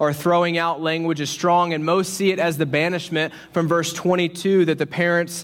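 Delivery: ordinary delivery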